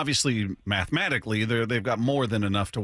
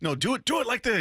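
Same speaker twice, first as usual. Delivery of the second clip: very high, pushy, insistent yell, acted out; 12 semitones higher than usual. Recalling a colleague trying to get Blowers to record something: retelling a yell. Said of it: "yelled at".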